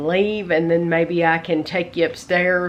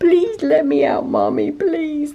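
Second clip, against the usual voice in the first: put-on pleading cat voice, very high and swooping; 10 semitones higher, 3 dB louder than usual. Voicing a cat shut in the bathroom, begging: voicing the cat pleading. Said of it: "That's what he's saying".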